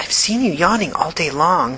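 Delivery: whispering. Walking slowly down the hallway with her friend, she whispers. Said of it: "Jen whispered".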